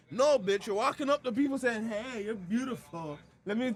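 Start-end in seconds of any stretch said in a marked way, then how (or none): 1.8-3.7 mock creepy tone, higher pitch. Imitating a man who walks up to people filming them: imitating someone being creepy. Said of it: "creepy shit".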